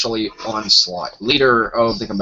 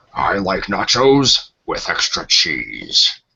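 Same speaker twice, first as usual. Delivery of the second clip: intoned robot leader voice, swooping pitch; 5 semitones lower than usual. Asked on the show to say something in his Optimus Prime voice. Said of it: "say something in my Optimus Prime voice".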